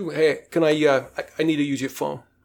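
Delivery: put-on Brooklyn mobster accent. Retelling what wannabe mafia guys at the restaurant said, wannabe mafia Brooklyn accent. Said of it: "this is where the Brooklyn accent comes in".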